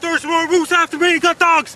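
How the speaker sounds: frantic, panicked man's outburst. Acting out a guy being chased by moose: panicked fleeing. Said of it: "we're gonna do a guy being chased by moose".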